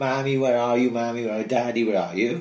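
imitated crying, scared child voice. Acting out twins alone in a crib: imitating a crying child. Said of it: "crying their eyes out, going".

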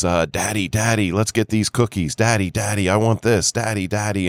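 cute, put-on little girl voice. Retelling what a little girl said to her father, imitating a cute little girl. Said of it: "this cute little girl is".

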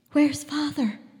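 whispering. A girl, seeing her father's dog return without him; whispered. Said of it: "she whispered".

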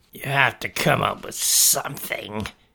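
sibilant, hissing monster voice. A many-eyed creature speaks to Tina: hissed. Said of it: "he hissed".

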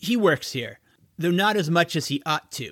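ordinary delivery

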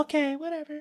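put-on woman's voice, high and soft. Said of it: "I'm gonna use that voice for her".

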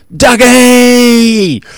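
loud, high-pitched shout.

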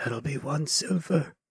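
stage whisper that carries. Voicing Bigsby in a shared role-play scene, whispering. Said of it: "Bigsby whispers".

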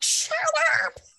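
put-on shout. Retelling yelling at the dogs during the drive-thru order: imitating own yell at dogs. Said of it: "I'm also pretty sure I yelled at the dogs".

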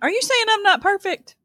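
playful ribbing in a very high voice. Responding to the other speaker's remark, teasing. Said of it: "I was just teasing".

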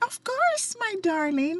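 very high, cheerful voice. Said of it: "she really sounds like that cheerful character".

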